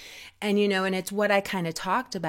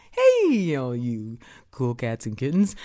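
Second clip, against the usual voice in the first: low-pitched voice with a swinging lilt; 6 semitones lower, 3 dB louder than usual. Trying out an impression of Carole Baskin's greeting: Carole Baskin impression. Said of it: "Just watch".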